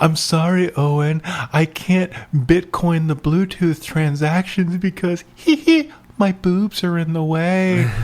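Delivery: giggly, breathy, cute computer voice. Joking as a cute giggly AI talking to Owen: giggly anime-dub AI voice. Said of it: "weird giggly hiccup".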